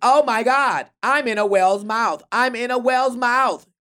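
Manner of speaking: building read-aloud storytime voice. Retelling the whale story, the speaker reads it as at a library: louder children's book reading. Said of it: "It's just you getting louder".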